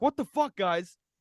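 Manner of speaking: angry, fed-up, pissed-off complaining outburst. Retelling another Packer fan's reaction, the speaker imitates the angry fan. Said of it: "this other guy was pissed".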